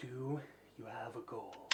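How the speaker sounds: low, soft, echoing void-like voice.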